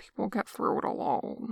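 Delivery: low, soft, barely voiced muttering. Pressed by Jong-in, the other man replies in a low mutter. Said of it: "comes a low mutter".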